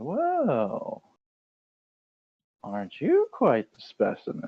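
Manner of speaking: drawn-out, interested flirtatious voice. Narrator voices a woman gently gliding over to a man, intrigued, interested. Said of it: "has a spark of interest in her eyes and gently glides over".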